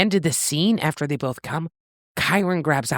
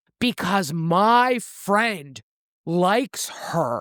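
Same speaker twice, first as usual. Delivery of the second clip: put-on dude bro voice, much slower; 4 semitones higher than usual. Retelling what a guy said after barging into the bathroom, in a dude bro voice. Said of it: "I gotta do dude bro voice".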